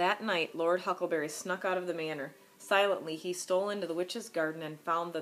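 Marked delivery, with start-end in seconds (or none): none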